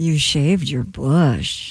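said in a flirting way. In a party acting game, delivering the assigned phrase with a chosen emotion: flirty. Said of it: "very flirty".

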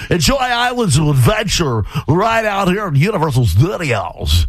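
over-the-top, high, showy radio announcer voice.

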